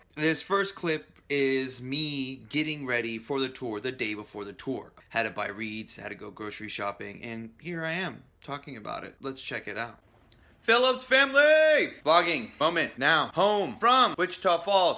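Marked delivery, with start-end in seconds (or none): 10.6-15.0 loud, high-pitched mechanical robot voice. Greeting viewers at the start of a vlog clip: talking like a robot. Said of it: "I'm talking like a robot".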